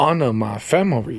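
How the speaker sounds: overdone put-on Southern and Japanese accent blend. Repeating an accent bit for the others to guess: overdone put-on accent. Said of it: "that time I put too much into it".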